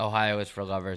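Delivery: plain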